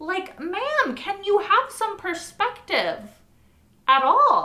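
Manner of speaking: very high, loud, shrill, wildly swinging pitch yell. Venting about a story character, the speaker addresses her directly: yelling. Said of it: "sorry, I'm possibly yelling".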